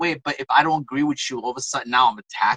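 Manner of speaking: ordinary delivery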